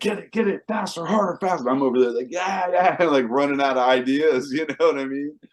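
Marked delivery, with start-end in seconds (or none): 0.0-1.7 mock yelling, much higher in pitch. Retelling Dave yelling at the speaker over his intercom, imitating Dave yelling commands. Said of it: "he's yelling at me on his intercom".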